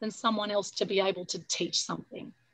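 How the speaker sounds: ordinary talk, nothing marked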